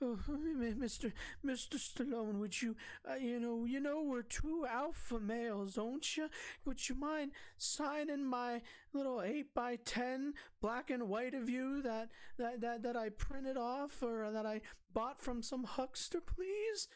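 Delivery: trembling, quivering, very high and slow voice. Retelling how someone nervously asked for an autograph: imitating someone quivering.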